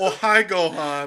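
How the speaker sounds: put-on high-pitched Eastern European accent. Continuing the joke about the voice actor: Tommy Wiseau impression. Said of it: "Eastern European is a weird accent".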